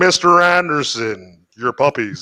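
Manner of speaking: measured, unhurried speech. Acting out a villain coming in for the puppies: Agent Smith voice. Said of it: "like the Mister Smith, like, from The Matrix".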